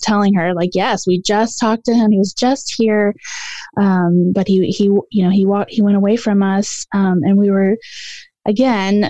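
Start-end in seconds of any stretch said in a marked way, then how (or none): none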